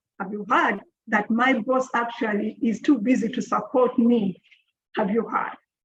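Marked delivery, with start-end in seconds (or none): none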